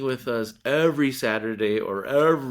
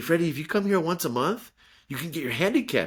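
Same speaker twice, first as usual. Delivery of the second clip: mock eager, enthusiastic, excited and emotional tone; 4 semitones higher than usual. Speaker quotes what a professor told him, retelling excited speech. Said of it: "he said it with such emotion and some excitement".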